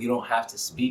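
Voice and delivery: ordinary talk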